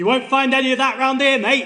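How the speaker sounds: very loud, high-pitched shout from afar. Retelling a passer-by calling over a fence: imitating a man shouting. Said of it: "he shouts".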